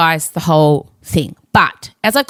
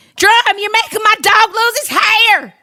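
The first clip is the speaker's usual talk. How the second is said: put-on Southern belle accent, higher pitch. Retelling what Weezer said at the wedding: Southern accent imitating Weezer. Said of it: "I do a very good Southern".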